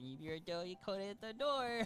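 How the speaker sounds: playful, childish, mocking put-on voice. Voicing a child who mimics a player's line: childish mimicking of someone's voice. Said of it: "mimics, uh, your voice, not in, like, a mean way, but in a very childish way".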